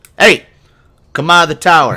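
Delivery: very loud, high, booming bellowing call. An unseen voice calls to someone in the tower: bellowing voice. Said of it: "you hear a voice bellow out".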